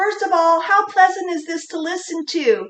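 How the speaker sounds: high-pitched voice. Showing why not to start a sentence high, speak in a high-pitched voice. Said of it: "if you start up here in a higher pitched voice".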